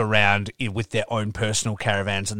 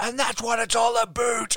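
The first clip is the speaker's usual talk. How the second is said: very high-pitched put-on English accent; 14 semitones higher than usual. Retelling a wrestling crowd call-out: imitating an English accent. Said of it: "in my English accent".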